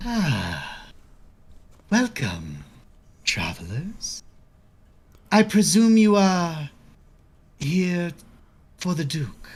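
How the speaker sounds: high, sly, lingering, long drawn-out "Ah". A game narrator voices a woman greeting travelers, with a gnarled grin. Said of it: "she gets this gnarled grin and she goes".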